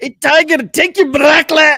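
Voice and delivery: very high, loud, yelled Scottish accent. Speaker attempts the suggested line to Tiger Woods; Groundskeeper Willie Scottish accent. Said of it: "but in a Scottish accent".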